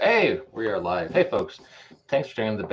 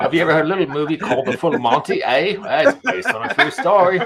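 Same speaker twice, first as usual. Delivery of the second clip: horrible put-on British accent, raised and high; 8 semitones higher, 8 dB louder than usual. Speaker voices a character, in a horrible British accent. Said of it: "that's my horrible British accent".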